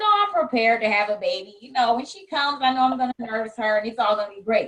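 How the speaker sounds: plain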